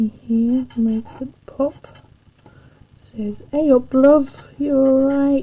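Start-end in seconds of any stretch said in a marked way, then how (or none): 3.5-5.4 put-on northern English Yorkshire dialect accent. While working on a drawing, voicing what it says in a yorkshire accent. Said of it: "that Yorkshire accent".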